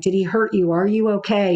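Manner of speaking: normal talking voice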